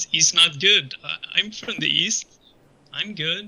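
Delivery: wavering, uncertain voice that wobbles. Retelling their own reply after she says going east is no good: retelling a wavering, unsure reply. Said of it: "With like some wavering in the voice".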